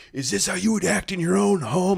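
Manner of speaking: put-on very high, rough, frantic screaming. Recalling a dad who flipped out on the speaker as a kid, imitating someone screaming. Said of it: "flipped out on me and was like screaming".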